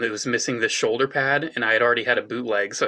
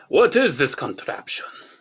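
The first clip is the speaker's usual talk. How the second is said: bad, over-the-top, exaggerated fake Italian accent; 4 semitones higher than usual. Voicing a figure looking at the apple of Eden, bad exaggerated Italian accent. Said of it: "my Italian accent is the worst".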